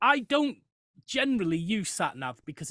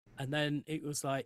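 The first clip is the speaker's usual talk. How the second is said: usual speaking voice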